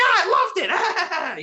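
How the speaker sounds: very high-pitched, slow cackle. Describing the heel caller's laugh Scorpio Sky copied, a Jerry Lawler cackling laugh. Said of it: "the heel caller would do the cackling laugh".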